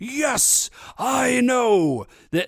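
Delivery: very high-pitched, slow announcer voice. Retelling a scene, voicing Champion Durago: Champion Durago announcing voice. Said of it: "always sound like he is announcing something".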